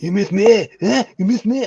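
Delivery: very high, angry taunt, spat out. Quoting a movie scene to friends, as Van Damme. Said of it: "He's so angry".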